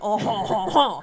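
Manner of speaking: put-on pretentious French voice, slow laugh. Showing the voice used to imitate a pretentious Frenchman: imitating a pretentious Frenchman. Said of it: "the voice I use when I try to imitate that pretentious Frenchman".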